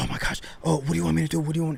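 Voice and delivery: mock frantic, high, rushed, tumbling panicked voice. Recounting calling his fiancée after a car accident, imitating her panicking. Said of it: "now she's panicking".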